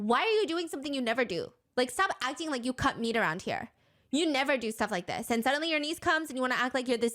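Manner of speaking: heated, angry screaming. Retelling how Mimi screamed at her husband: imitating someone screaming angrily. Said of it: "starts screaming at her husband".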